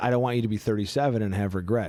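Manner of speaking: ordinary talk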